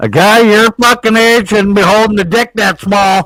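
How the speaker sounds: shrill, very high, taunting yell at full volume. Retelling what Sarah yelled through the window while ice fishing: imitating Sarah yelling loudly. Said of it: "just loud as can be".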